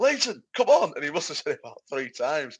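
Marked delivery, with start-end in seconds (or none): 0.0-0.9 put-on shout, louder. Retelling how someone shouted at a player not warming up: imitating Lowe shouting. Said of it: "Lowe was shouting".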